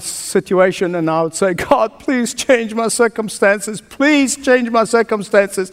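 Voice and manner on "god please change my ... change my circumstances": acted, earnest, pleading, begging cry. Speaker recalls his early years, re-enacting his prayer: re-enacting crying out to God. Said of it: "I would cry to God".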